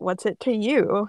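plain

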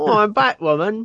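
fake cockney accent. Joking about how a hero could mask her identity, speaker uses a fake cockney accent. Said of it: "put on like a Cockney accent".

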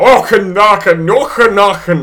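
put-on exaggerated Scottish accent. Mocking an actor who overdoes his own accent: imitating an exaggerated Scottish accent. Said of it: "a Scottish person puts on a Scottish accent".

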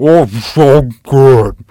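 very loud speech through a full mouth. Acting out a smug person answering while chewing a huge bite of food. Mouth full, chewing. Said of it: "looking at you all giddy like".

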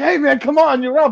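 put-on very high, hollering yell. Retelling how a coach called a slow wrestler to the mat: imitating a coach yelling. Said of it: "his coach is yelling at him".

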